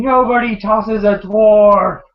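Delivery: very slow, loud, drawn-out bellowing shout. Retelling a fight scene as the dwarf king swings his axe: shouting as Ungrim. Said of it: "he's just shouting".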